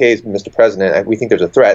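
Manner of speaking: ordinary talk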